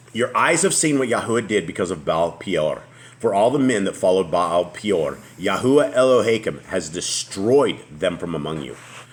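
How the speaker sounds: normal talking voice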